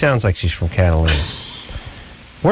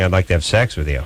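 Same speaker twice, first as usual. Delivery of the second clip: plain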